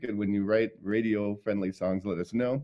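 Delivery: plain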